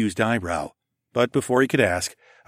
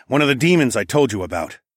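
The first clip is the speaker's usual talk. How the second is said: usual speaking voice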